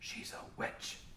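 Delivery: secretive, breathy, hushed leaning-in whisper. Retelling how a man leans over about the dwarf lady, retelling a whisper. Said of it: "He leans over and whispers and goes".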